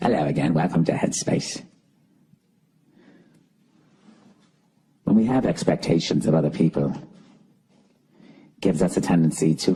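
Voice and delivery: gentle, soothing British meditation-guide voice. Imitating the voice that greets you at Headspace, soothing Headspace voice. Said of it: "he's talking in a very soothing voice like this, some sort of British accent".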